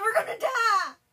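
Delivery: very high, very loud, shrill, terrified, panicked scream. Retelling how a cousin reacted to a mummy in a movie, retelling a panicked scream. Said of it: "covers her eyes, goes".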